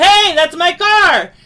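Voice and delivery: very high, very loud, drawn-out yell. Showing how you'd react if someone were stealing your car: yelling. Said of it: "you would naturally yell".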